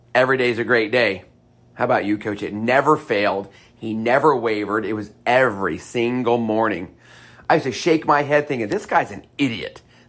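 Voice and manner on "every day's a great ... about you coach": mock flat, level, unvarying monotone. Recalling daily morning greetings, the speaker imitates the other coach's reply: imitating a monotone reply. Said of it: "he had the same monotone response".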